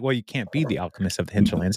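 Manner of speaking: ordinary talk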